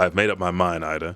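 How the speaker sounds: ordinary delivery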